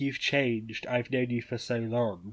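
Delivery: ordinary delivery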